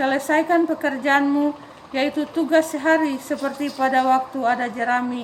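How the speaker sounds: plain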